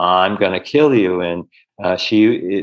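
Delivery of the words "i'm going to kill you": put-on deep masculine possessed voice, lower. Retelling a healing session where a woman's voice changed: imitating a masculine entity voice. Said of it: "And the voice goes".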